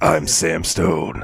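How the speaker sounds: low, gruff action-hero voice. Chatting about a game remake, mimicking its hero in a gruff Sam Stone voice. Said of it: "he's still got this the same voice where he's like".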